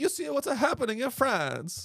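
put-on Italian accent, very high pitched. Joking about the protests in France in a put-on Italian accent. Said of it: "I can literally only do the Italian accent".

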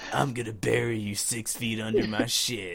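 put-on macho voice, poorly done. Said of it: "the typical macho but shitty voice".

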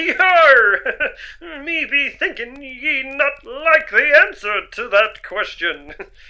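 put-on swashbuckling pirate voice, drawn-out yar. Speaking in character during a narrated scene, in a pirate voice. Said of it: "you don't have to do the voice down here".

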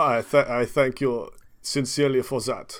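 put-on German accent. Replying to Barry, the first aid marshal, before a party, German accent. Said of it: "I'm going German".

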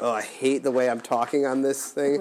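normal talking voice

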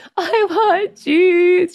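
mock crying small-child voice, very high, pleading. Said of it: "just crying".

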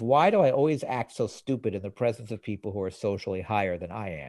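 ordinary talk, nothing marked

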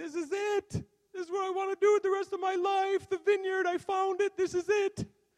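put-on, very high, loud, tearful sobbing. Recounting a phone call home after finding his calling, reenacting sobbing on the phone. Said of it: "I'm sobbing on the phone, going".

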